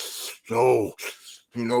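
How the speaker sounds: put-on soft, breathy, breathless, labored voice. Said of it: "like he could almost barely talk".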